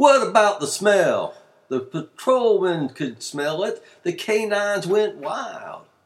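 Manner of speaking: very loud, high voice. Losing his cool, a questioner presses the narrator: raised his voice. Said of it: "raised his voice".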